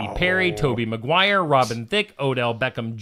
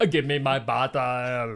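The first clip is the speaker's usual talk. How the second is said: put-on Austrian accent, quieter; 5 dB quieter than usual. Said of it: "talking like Arnold".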